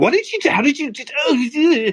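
high, slow mocking voice.

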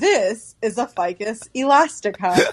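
very slow, deliberate, formal teacher voice. Imitating how the listener used to talk in their videos, formal educator tone. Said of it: "talk like such an educator".

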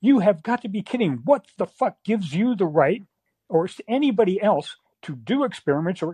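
mock indignant, disbelieving, furious screaming tirade. Retelling what they screamed at a man they were furious with, retelling screaming at him. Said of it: "I just screamed at him".

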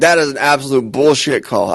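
ordinary talk, nothing marked

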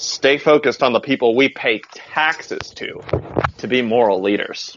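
grand, very dramatic stage-style delivery. Speaker reads a statement aloud for effect: very dramatic reading. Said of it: "I'm going to do it very dramatically".

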